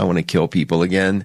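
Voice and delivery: ordinary delivery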